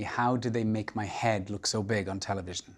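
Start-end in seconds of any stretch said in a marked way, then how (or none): none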